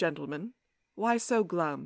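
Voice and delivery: low, soft, velvety British voice. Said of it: "a velvety British voice says".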